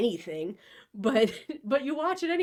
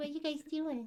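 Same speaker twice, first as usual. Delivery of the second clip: put-on pet voice, higher and quieter; 5 semitones higher, 10 dB quieter than usual. Voicing a pet who wants attention: voicing the pet Winnie.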